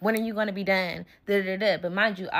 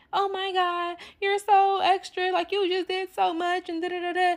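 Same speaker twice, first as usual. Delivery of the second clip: acted-out weepy, tearful voice, pitched high; 10 semitones higher than usual. Retelling what a crying friend said afterwards: imitating a crying friend. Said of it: "my friend's crying and stuff".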